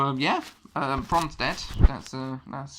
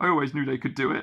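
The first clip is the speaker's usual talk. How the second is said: put-on commentator voice, dead serious, no sarcasm. Retelling a commentator's line after the match win: imitating Booker T, dead serious. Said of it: "with no, no sense of, like, sarcasm".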